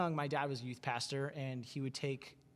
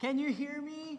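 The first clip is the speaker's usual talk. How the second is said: very high, pitched-way-up grandparent voice; 13 semitones higher than usual. Joking about a video call, imitating a grandparent leaning up to the camera: imitating a grandparent on a video call. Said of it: "stupid grandparent thing where you, like, go way up to the camera".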